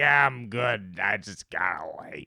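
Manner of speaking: talking like a pirate. Retelling what a passed-out stranger answered when asked if he was okay, pirate voice. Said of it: "like he had a pirate voice".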